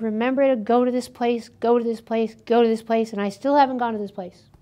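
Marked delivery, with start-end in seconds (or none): none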